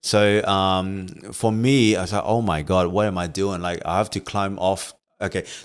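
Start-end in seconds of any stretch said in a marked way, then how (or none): none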